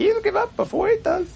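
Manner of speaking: squeaky, very high, small goblin voice. Voicing a little goblin reacting to a player's saving throw, in little goblin voice. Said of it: "the little goblin looks at you and goes".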